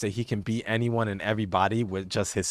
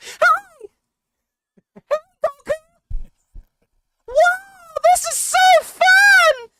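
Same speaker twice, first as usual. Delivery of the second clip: very high, loud, drawn-out, playful drawling voice; 10 dB louder than usual. Boasting he could do a better Zeno than the show's version: Zeno impression. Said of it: "I probably could do a better Zeno".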